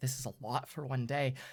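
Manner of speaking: hushed aside, muttered under the breath. Voicing a character told to flee with the copies: muttered under her breath. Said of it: "She kinda says in her breath".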